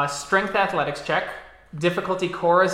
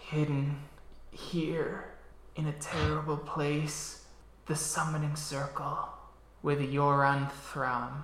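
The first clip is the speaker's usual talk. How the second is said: barely-there, faint dying half-whisper; 2 semitones lower, 10 dB quieter than usual. Voicing a dying red cap half-whispering to a player: dying half-whisper. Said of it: "it starts whispering something to you".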